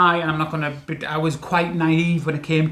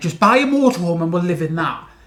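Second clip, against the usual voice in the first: mock fed-up, exasperated, annoyed and irritated tone; 4 dB louder than usual. Retelling the partner's past suggestion, imitating an annoyed remark. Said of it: "You were getting annoyed at me".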